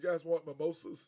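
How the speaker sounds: usual speaking voice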